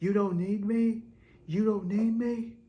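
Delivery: high mock scream. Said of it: "she screams out".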